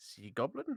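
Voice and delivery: low-key, understated, confiding aside. [name] leans over to Freyja and speaks to her: very quiet. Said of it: "and just very quietly say".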